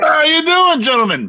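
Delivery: very high, talking through a mouthful. Voicing a character who walks up chewing on a large ham. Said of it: "chewing on a large ham".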